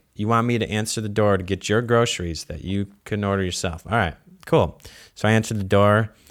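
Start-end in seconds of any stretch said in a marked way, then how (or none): none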